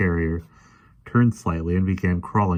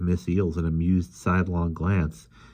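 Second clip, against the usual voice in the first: ordinary delivery, nothing marked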